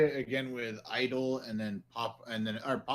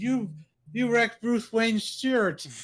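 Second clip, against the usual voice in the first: put-on very high, loud, tipsy drunken slurring voice; 12 semitones higher, 7 dB louder than usual. Retelling a fight scene, imitating drunk slurring Superman. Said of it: "Superman's kinda drunk".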